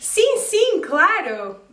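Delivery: excited, eager, high, swooping tone. Explaining Portuguese replies, showing a sincere yes to an invitation: excited tone. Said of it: "with an excited tone".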